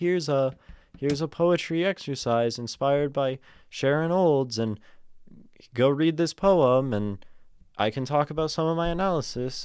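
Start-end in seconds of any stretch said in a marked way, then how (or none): 0.0-6.9 silly, high, loud put-on funny voice. Imagining posting a poetry exercise on Substack, said in a funny voice. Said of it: "I'm saying it in a funny voice".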